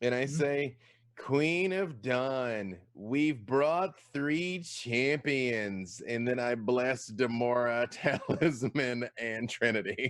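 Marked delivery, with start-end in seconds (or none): 1.2-6.0 grand, ceremonial, proclaiming announcement style. A player's character addressing the queen of dawn in a tabletop game; booming voice. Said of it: "thaumaturgy so that my voice booms".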